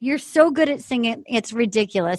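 ordinary delivery

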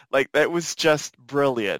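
ordinary talk, nothing marked

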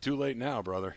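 mumbled quietly under breath. Retelling what was said quietly about a self-given nickname: Carmelo under his breath. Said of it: "Carmelo under his breath goes".

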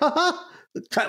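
slightest little laugh, high and tiny.

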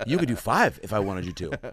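earnest but blunt, sincere, direct, plain delivery. Retelling what the headliner said to an opener: sincere but direct Bobby Lee delivery. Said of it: "with a very sincere but direct Bobby way".

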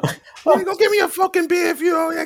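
put-on loud high child voice.

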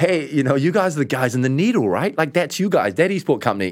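clumsy fake American accent. Quoting what Americans have told the speaker, in a bad American accent. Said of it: "this is a bad American accent".

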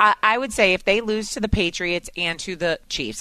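ordinary delivery

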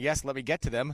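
mock cheerful voice. Mimicking the other speaker's reply about reading texts: imitating a cheery tone. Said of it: "You sounded so cheery going".

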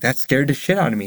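ordinary talk

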